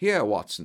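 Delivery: ordinary delivery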